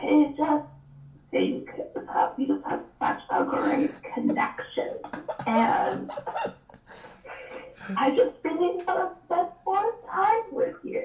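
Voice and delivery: slow, drawn-out hushed whisper throughout. Retelling how a woman on a show talks: imitating someone whispering. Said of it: "when she whispers, she's like".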